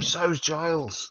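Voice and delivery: high-pitched shouting. Calling out from behind the werewolf: shouting from behind. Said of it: "I shout behind him".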